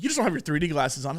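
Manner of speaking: put-on short, snide, snippy, curt delivery. Retelling a theater worker's reply to a complaint: imitating a snippy clap back. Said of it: "and then they clap back".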